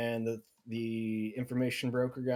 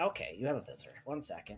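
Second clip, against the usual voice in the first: small gnome character voice; 5 dB quieter than usual. Voicing a gnome asking a player's name: little portly gnome voice. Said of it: "The gnome comes back to you".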